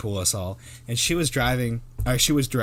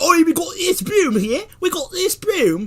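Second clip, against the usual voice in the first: put-on very high, loud working-class British accent; 8 dB louder than usual. Imitating someone selling a broom online: lower-class British accent. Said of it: "with your lower class British accent".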